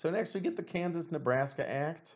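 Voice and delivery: voice breaking mid-line. Speaker explaining history names the next act: voice cracking. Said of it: "A little voice crack there for you".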